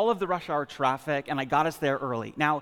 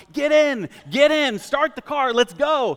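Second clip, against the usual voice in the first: loud high-pitched yelling; 10 semitones higher, 7 dB louder than usual. Retelling running back to the car to his wife: reenacting own yelling. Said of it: "I start yelling".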